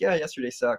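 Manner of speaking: ordinary talk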